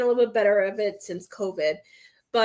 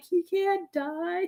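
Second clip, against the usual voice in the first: mock sobbing, higher pitch; 8 semitones higher, 4 dB quieter than usual. Retelling own reaction to a character being shot in a film: retelling own sobbing.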